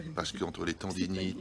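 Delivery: quiet, hushed speech.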